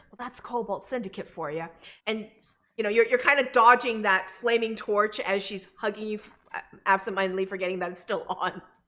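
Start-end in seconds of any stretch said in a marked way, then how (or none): 0.2-1.7 hushed half-whisper, close to the ear. A character hugs the listener and speaks into their ear, half-whispering. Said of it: "she whispers into your ear".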